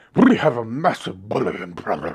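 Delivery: clumsy fake British accent. Quoting the uk about the game: bad british accent. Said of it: "Another great accent".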